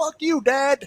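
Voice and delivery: put-on very high defiant kid voice, talking back. Imagining what a grown child will say to their father: imitating his future kid cursing him out. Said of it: "they gonna be like".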